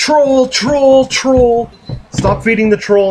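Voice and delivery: mock very high, slow, drawn-out crowd yell. Retelling how forum users answered a question: imitating people yelling. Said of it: "everyone just starts yelling".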